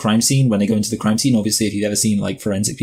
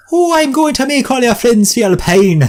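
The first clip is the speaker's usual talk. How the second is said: fake, bad Irish accent, very high, loud, shrill, pain as pian; 6 dB louder than usual. Imitating how another man delivers a line, in a bad irish accent. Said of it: "he says it like pian".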